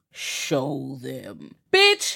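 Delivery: big, deep voice with swooping pitch. Speaker retells a voice heard at night among lights and sounds: deep voice. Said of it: "there's a deep ass voice that goes".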